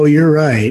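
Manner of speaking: deflated, resigned, defeated, giving-in tone. Acting out someone's reply after being told they're right: acting out resigned agreement. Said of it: "you can even hear in my voice when I act that out, there's a resignation to it. There's a sense of defeat".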